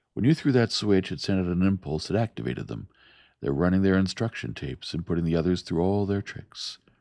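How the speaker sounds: ordinary delivery, nothing marked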